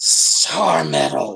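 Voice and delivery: low, almost-hissing female voice. Narrator voices a female voice heard in a character's head, hissing. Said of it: "that female voice almost hiss".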